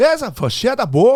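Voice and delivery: imitated thick Portuguese accent. Retelling how the request really sounded: imitating a thick portuguese accent. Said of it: "what is it, Portuguese?".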